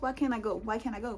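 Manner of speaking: mock bold, said from the chest. Retelling how she challenged the lady, retelling a bold demand. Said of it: "Say it with your chest".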